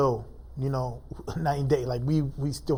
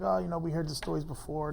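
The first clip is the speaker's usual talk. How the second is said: play-acted jeering cop voice, laughing along; 3 semitones higher, 4 dB quieter than usual. Retelling how cops in the cell brushed off his begging, mimicking cops mocking him. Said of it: "they're laughing at me like".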